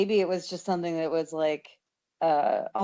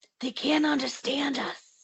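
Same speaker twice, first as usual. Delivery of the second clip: loud, pitched-up, put-on stage whisper; 8 semitones higher than usual. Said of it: "doing that really, that really loud whispering".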